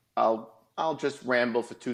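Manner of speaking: normal talking voice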